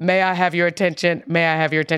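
commanding, authoritative preacher's pulpit voice.

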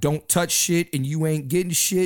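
usual speaking voice

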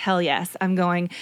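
ordinary delivery

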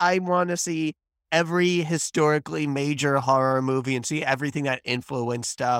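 ordinary talk, nothing marked

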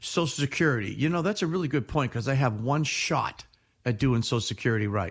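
ordinary talk

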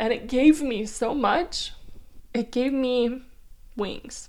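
crying through every word. Talking about leaving Oahu, a home for seven years, crying. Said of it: "I'm freaking crying right now".

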